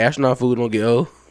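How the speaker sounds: ordinary talk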